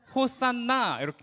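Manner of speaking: 호산나 with stress on the final syllable na. Reading a Greek word aloud, stress on last syllable na of 호산나. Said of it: "이렇게 나의 악센트가 들어가야 돼요".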